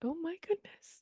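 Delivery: slow, high, shocked whisper.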